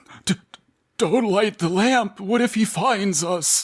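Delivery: timid, delicate, fragile voice. Improvising a character's line in a group, fragile, cocooned voice. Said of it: "as though inside of a fragile cocoon".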